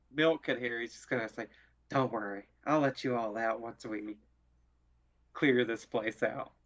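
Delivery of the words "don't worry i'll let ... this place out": whispering, much lower pitch. A player's character whispers to those he will let out: low whisper. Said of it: "he is going to whisper at a low voice".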